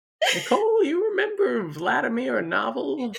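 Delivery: put-on very high, swooping little-old-woman voice. Podcast co-host imagining still doing the podcast in 2050, asking Nicole, old woman voice. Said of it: "Why do you sound like a 90-year-old woman?".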